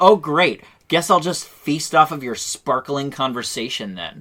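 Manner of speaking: acted out, very sassy and biting. Retelling a character's comeback about food: imitating a sassy retort. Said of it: "Very sassy".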